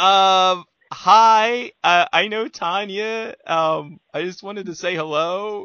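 put-on nervous voice. Retelling going up to say hello at Exotica: imitating own nervous greeting. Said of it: "nervous when I went to meet you".

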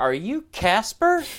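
mock hesitant, unsure tone. Telling a story about introductions, retelling an uncertain question. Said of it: "I said it with like so much uncertainty in my voice".

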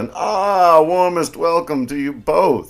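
oily, smarmy delivery, high-pitched and slow. Reading an opening speech's welcome line the way it's meant, smarmy tone. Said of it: "just schmarmy, ... I guess I'll just read it in the tone it's supposed to be read".

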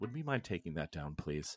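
nicest, most polite, soft, extra-nice voice. Retelling what the actor playing Vadim asked, imitating Scott's nicest voice. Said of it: "in the nicest voice he's used with me".

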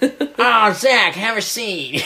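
attempted old-timey 1920s man voice. Playing a secretary calling someone into a meeting, attempted 1920s guy voice. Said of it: "I was supposed to sound like 1920s guy".

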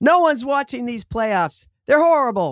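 grumpy, gruff, complaining voice calling out. Retelling what a cranky grocery store worker yelled: imitating someone yelling. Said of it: "he yells after me".

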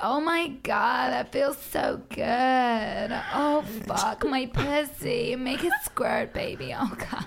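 very slow, fake, put-on American accent. Imitating what is usually heard in porn: put-on American accent. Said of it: "you always put the American accent on as well".

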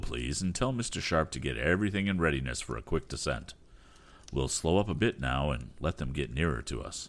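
ordinary delivery

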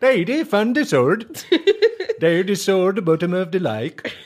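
high, slow, put-on Swedish accent. Retelling a girl calling to her dad after finding a sword: put-on swedish accent. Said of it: "Imagine that in a Swedish accent".

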